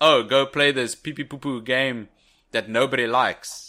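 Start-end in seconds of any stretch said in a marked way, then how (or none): none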